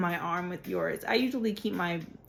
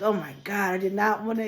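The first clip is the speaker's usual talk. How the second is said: put-on voice sounding relieved. Retelling the cousin's reaction in the bathroom: imitating a relieved voice. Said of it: "hear the relief in his voice".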